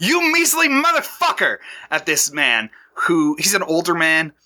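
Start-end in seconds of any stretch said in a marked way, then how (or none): 0.0-1.6 very high-pitched yelling outburst. Describing a man yelling at a higher-ranking engineer, retelling a yell. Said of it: "he is likewise yelling".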